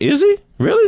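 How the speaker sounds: astonished, surprised disbelief squealed high. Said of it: "I was like".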